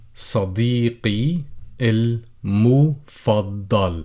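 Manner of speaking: slow, careful, deliberate reading-aloud voice.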